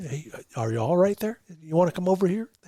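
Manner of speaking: soft, hushed, murmured muttering half-whisper. Imitating quail talking to each other in the trees: imitating half-whispering quail. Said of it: "They're just kinda whispering, you know, like this".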